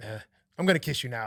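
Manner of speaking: put-on Australian accent. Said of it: "anybody with that accent".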